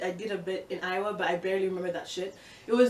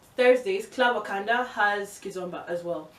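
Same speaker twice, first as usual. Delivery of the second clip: ordinary talk, nothing marked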